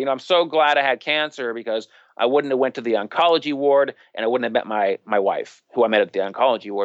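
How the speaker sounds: ordinary talk, nothing marked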